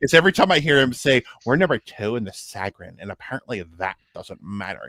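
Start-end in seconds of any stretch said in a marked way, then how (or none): 1.4-4.9 put-on breezy valley girl voice. Quoting a football fan from a video: imitating a valley girl voice. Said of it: "he sounds like a valley".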